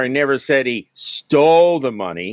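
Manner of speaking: stole punched with stress and rising pitch.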